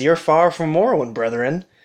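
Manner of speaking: darkly threatening, sinister, menacing tone. A robed Dunmer calls out to a stranger stepping out of the smoke, sinister tone. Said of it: "he's got this kind of sinister tone to his voice".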